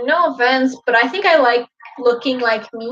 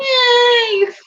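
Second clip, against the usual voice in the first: pitched up, with "yay" stretched out; 11 semitones higher, 4 dB louder than usual. Answering a would-you-rather question, the speaker talks like Kermit: Kermit the Frog voice. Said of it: "and I talk like Kermit all the time".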